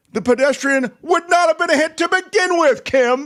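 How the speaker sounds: high shouted yell building in intensity along the line. Reading out a reply addressed to kim: mock-yelling a reply. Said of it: "Why are you yelling?".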